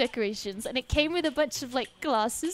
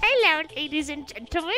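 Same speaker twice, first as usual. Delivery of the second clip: put-on elderly witch voice. Showing off your new character, greet everyone in an old granny witch voice. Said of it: "It's your friendly neighborhood granny witch".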